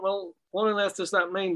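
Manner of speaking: ordinary delivery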